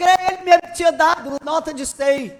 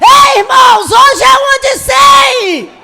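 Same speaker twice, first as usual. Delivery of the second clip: put-on shrill, high, very loud, booming child's yell; 9 semitones higher, 13 dB louder than usual. Retelling a boy running down the stairs waving a bill: imitating a child shouting. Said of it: "gritando pra igreja".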